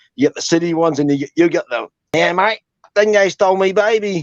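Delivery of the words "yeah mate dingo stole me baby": put-on outback Australian accent, slow and high. Showing how the other speaker does the accent, in an outback Australian accent. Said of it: "outback Australian accent".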